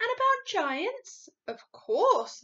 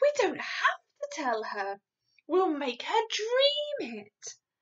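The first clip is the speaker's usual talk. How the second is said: eager, excited, high-pitched, bursting-out delivery; 7 semitones higher than usual. A girl proposes her plan to the giant, speaking excitedly. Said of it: "Sophie said excitedly".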